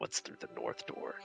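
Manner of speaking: whispering. In a role-play scene, a player whispers a question into a man's ear. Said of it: "I'm gonna whisper in his ear".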